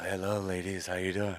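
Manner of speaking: soft, smooth imitation voice. The speaker mimics his guest for everyone, smooth imitation of ATO. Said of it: "he's all".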